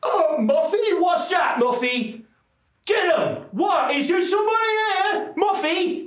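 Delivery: very high, slow, drawn-out calling voice. Voicing someone upstairs calling for the little dog. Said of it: "you hear a voice upstairs going".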